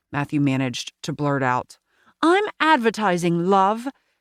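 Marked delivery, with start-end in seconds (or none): 2.2-3.8 put-on short, clipped British accent. Reading a story aloud, voice a woman answering a question in a clipped British accent. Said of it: "in her clipped British accent".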